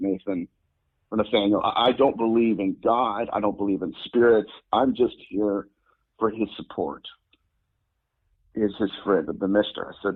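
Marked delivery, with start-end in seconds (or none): none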